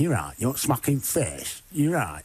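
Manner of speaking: northern English Wigan accent. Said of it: "talk like this".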